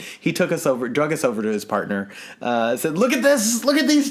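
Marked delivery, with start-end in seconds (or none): 3.0-4.1 very high, eager, excited, showing-off voice. Retelling how a man showed them to his partner, retelling an excited man. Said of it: "He was all excited about it".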